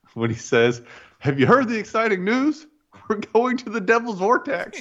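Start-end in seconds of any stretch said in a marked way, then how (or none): 1.2-4.9 very high-pitched, thrilled, excited voice. Quoting a favorite movie line the way the character says it: imitating an excited delivery. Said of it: "he's so excited about it".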